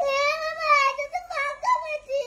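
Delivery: tearful, whimpering. Choosing among the sweets offered and finding one empty, the speaker is crying. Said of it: "আরে কান্না করিস না".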